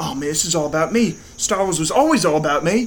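put-on English accent drifting into near-Australian accent. Imagine John Boyega getting ready for the interview, in a bad, Australian-sounding English accent. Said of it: "This is my English accent that sounds remotely Australian".

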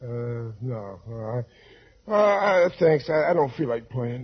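slow, halting, fake drowsy stammer. Declining an invitation to play pinochle, pretending to sound sleepy. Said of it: "you sound sleepy".

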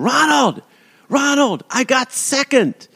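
play-acted very high, stretched-out, drawn-out calling scream. Retelling screaming to Ronald on a parade float after a race, retelling a scream. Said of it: "I screamed".

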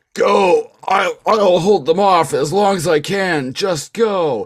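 heroic shout, high and loud.

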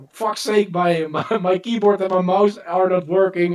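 put-on high, fed-up, exasperated shouting. Recounting keyboard and mouse failing mid-game, retelling own yell. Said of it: "I was just yelling like".

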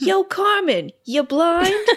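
put-on New York accent, pitched a bit high. Recounting a movie scene at the bunks, quoting Mary-Kate's New York accent. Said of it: "in an amazing New York accent".

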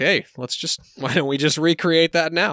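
put-on joking tone. Narrating a story, the speaker quotes the man, retelling a joking suggestion. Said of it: "he jokingly is like".

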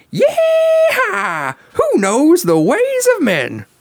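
very high, slow, swooping cowgirl voice. Voicing a line for the other player to guess, with a vocal hint: Jessie cowgirl voice. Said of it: "An added vo-, vocal characterization?".

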